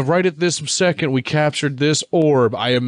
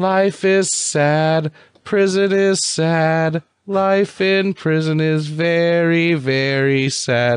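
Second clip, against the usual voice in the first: put-on cute small child voice, slow; 4 semitones higher than usual. Describing a little blue flame character from a movie, voicing it: little kid voice. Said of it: "It sounds like a little kid".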